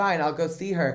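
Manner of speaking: usual speaking voice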